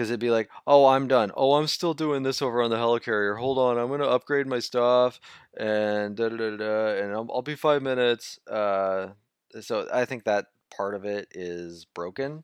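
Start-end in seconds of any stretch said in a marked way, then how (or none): 0.7-8.4 loud, impatient, teasing voice. Imitating a co-player who stalls a shared game: imitating a friend. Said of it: "do I really sound like that?".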